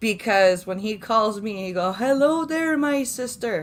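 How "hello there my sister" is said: put-on Newfoundland accent, higher. Retelling how a friend talks after calling family: imitating a Newfoundland accent. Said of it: "'cause they have a different accent".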